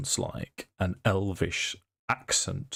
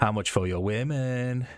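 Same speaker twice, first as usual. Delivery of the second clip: put-on English spoken in a Mexican accent; 4 semitones higher than usual. Game master voicing an elven mage speaking to the players, in a Mexican accent. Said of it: "It's the only thing I can say with a with a, um, a Mexican accent".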